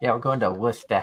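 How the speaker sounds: Boston accent, laid on for show. Talking about a milk run up to Worcester: put-on Boston accent. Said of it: "I gotta talk like a Boston".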